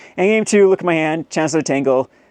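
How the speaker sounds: usual speaking voice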